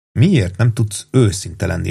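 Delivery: ordinary delivery, nothing marked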